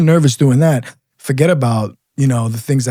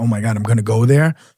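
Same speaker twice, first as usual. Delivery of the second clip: put-on nervous, panicky voice. Retelling how scared recruits reacted to their assignments: imitating a nervous cop.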